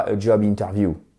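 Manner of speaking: heavy, exaggerated, forced French accent, flat stress.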